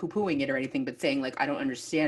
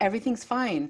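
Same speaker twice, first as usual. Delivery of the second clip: mock serenely composed, even, slightly high voice; 7 semitones higher than usual. Retelling the end of a movie, quoting a character, acting out a very calm voice. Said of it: "Rachel says in a very calm voice".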